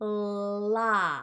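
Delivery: "la" drawn out very slowly. Showing learners the l sound very slowly: very slow la. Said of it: "do it really slow".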